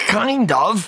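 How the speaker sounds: mumbled, very high-pitched. Mixer, asked by Mr. Oversight why they weren't there, answers: muttered. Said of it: "muttered Mixer".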